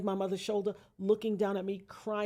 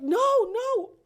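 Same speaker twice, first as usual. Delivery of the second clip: very loud, very high, shrill frantic screaming; 10 dB louder than usual. Retelling his sister's reaction after he said he was shot, retelling frantic screaming. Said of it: "she was screaming".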